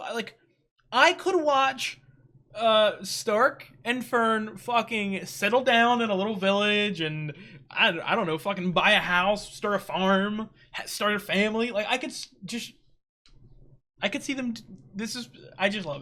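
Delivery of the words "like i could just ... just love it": fast, breathy, excited stumbling over words, stuttering. A viewer talking about two characters from a show, stuttering. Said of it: "I'm sorry for stuttering".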